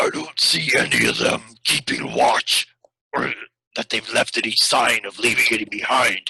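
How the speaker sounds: low, rumbling voice. A storyteller voices a figure who strides up to the listeners: rumbling voice. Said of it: "he says in a rumbling voice".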